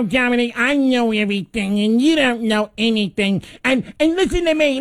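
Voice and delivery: mock whiny voice. Imitating a caller's complaints over the phone, putting on a whine. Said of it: "And he whines like this".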